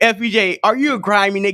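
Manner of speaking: ordinary talk, nothing marked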